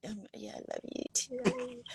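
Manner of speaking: slow, creaky, sleepy voice.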